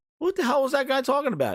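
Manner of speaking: high, fast indignant outburst.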